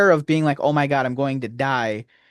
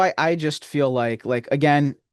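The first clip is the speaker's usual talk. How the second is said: plain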